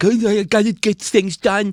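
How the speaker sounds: put-on Long Island accent.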